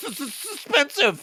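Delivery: put-on high-pitched stoned voice.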